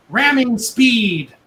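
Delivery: thin, high, tinny voice. Narrating a game scene, voicing a call from the sky: booming tinny voice. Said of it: "from a booming, tinny voice from the sky".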